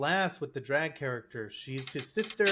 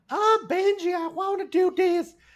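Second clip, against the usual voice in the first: put-on very high, shrill, loud, funny girly voice; 13 semitones higher, 6 dB louder than usual. Podcaster mocking a comedy film's lines, in a high-pitched Adam Sandler girl voice. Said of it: "she at least has a high pitched voice and she talks funny".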